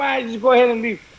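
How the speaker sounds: ordinary talk, nothing marked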